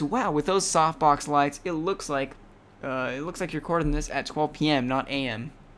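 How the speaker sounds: ordinary talk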